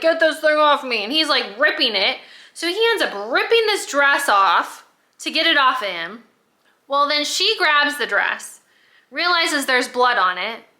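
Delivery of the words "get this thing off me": put-on panicked cry. Retelling a story where he has a panic attack: imitating someone panicking. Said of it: "he starts having a panic attack".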